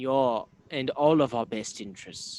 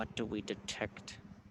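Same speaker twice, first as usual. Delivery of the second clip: hushed, barely audible whisper; 2 semitones lower, 12 dB quieter than usual. Asking the party what magic they detect: whispering. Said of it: "I'm gonna whisper".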